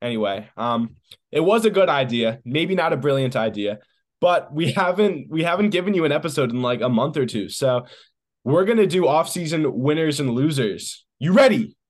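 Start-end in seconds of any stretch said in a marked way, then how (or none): 11.2-11.7 too loud, booming voice. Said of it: "that was too loud. I'm sorry if I hurt anybody's ears".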